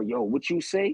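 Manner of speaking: amped-up, hyped-up, confrontational street tone. Retelling an argument with a speeding driver who reversed: imitating a hyped-up driver. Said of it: "he all hyped up".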